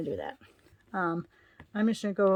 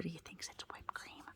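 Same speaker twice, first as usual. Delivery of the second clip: very quiet, barely voiced, breathy whisper; 19 dB quieter than usual. Speaker keeps a word from the dog nearby, whispering. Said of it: "I had to whisper that".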